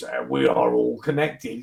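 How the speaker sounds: grating, creaky, deep, rough demonic voice. Recreating a recording the speaker played to a listener, demonic voice. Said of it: "and now this demonic voice".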